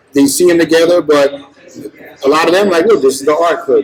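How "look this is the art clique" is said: ordinary delivery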